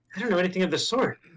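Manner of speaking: quiet aside muttered under her breath. A character in a role-play scene replies, muttering under her breath. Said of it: "That was under under her breath".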